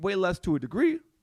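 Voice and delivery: voice breaking and cracking mid-phrase. Replying to the other speaker, voice cracking. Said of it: "Voice crack".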